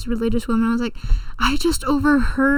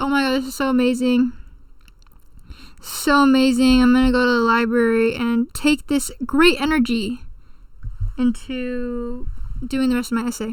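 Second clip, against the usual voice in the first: ordinary talk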